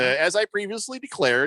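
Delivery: ordinary talk, nothing marked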